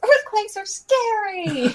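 very high, drawn-out, scary, stretched battle cry. Retelling a game character's spell-casting line: imitating Sue yelling. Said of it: "she yells".

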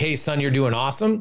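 ordinary delivery

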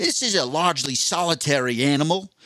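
attempted Australian accent. Trying out how to speak Australian, in an Australian accent. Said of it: "I don't think I can do the Australian accent for the whole time. I want to try".

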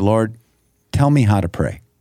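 plain

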